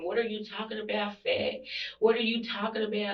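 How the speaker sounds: hostile, aggressive, in-your-face confrontational tone. Retelling a fight over holding the baby, the speaker is imitating her aggressive tone. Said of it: "and all aggressive".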